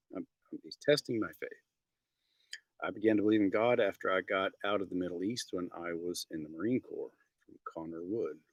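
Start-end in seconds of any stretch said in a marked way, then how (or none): none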